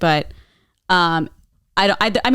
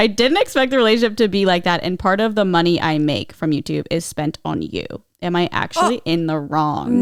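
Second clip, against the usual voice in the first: ordinary talk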